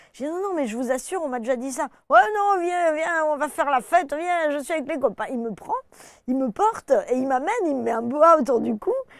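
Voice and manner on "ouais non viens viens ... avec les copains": put-on southern French accent, much higher, louder. Retelling a man's invitation from their story, in a southern french accent. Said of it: "un moustachu avec l'accent du Sud".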